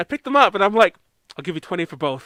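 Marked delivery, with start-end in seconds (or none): 1.4-2.3 put-on deadpan tone, lower and quieter. Retelling a haggling offer made to a seller: retelling own deadpan offer. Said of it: "I deadpan looked him in the eye".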